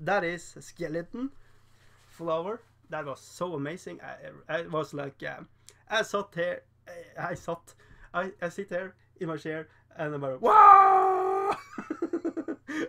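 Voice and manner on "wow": high, loud, excited scream. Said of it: "I'm screaming literally at the monitor".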